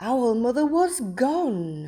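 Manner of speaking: storybook-style surprise, slow, with a long, stretched "gone". Reading a story aloud to children, showing an exclamation mark: surprised exclamation. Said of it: "we say it with a different voice".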